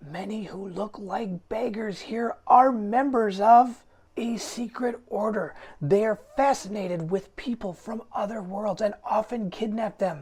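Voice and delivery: hoarse whisper. Narrating, voicing a fruit stand merchant speaking to the player, in a raspy whisper. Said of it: "She lowers her voice to a raspy whisper".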